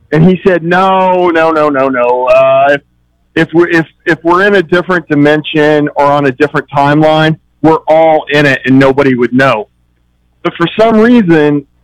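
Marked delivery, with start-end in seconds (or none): none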